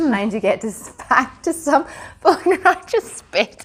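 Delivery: talking through laughter. Wishing viewers a wonderful summer and happy sewing, laughing while talking. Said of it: "I'm just trying to get the laughter out".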